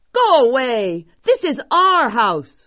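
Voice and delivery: high, mad, commanding, angry yell. A farmer steps outside to face monsters fighting in front of his home: shouting. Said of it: "He stepped outside and shouted".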